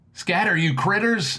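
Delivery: high battle yell. Recounting yelling at the furry creatures dropping from above, retelling a loud yell. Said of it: "In my loudest voice".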